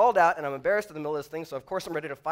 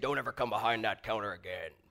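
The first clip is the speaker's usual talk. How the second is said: deep, low, quiet voice; 6 semitones lower, 7 dB quieter than usual. Retelling a voice heard after stepping behind a counter, imitating a deep voice. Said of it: "I hear this deep voice say".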